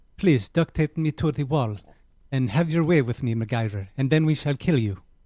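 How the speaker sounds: speaking with Israeli accent. Speaker attempts a Russian accent that comes out sounding Israeli: put-on Israeli accent. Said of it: "It sounds a little Israeli".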